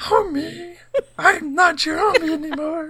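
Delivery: bad, very high cartoon mom voice, drawn out. Suggesting a better Simpsons breakup line: bad Marge impression. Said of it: "Just ignore my bad Marge impression".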